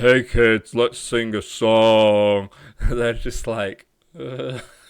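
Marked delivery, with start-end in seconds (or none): 0.0-2.5 deep, loud voice, very slow. Explaining how kids respond to voices, the speaker demonstrates a deeper voice. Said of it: "like a deeper".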